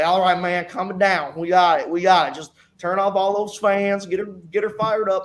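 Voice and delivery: put-on broad, thick Southern US accent, laid on. Retelling a race, the speaker quotes the spotter on the radio, imitating PJ's thick Southern accent. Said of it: "thick Southern accented guy".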